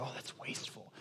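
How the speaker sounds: scornful, acted sneer in a very soft whisper. Speaker acting out what the Pharisees said, in a mock sneer. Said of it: "as they sneered".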